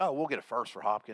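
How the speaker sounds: usual speaking voice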